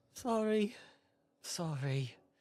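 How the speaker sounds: very weak, feeble, high voice. Narrating a story; a voice answers a knock from behind the door: very weak, soft voice. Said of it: "a very weak, soft voice".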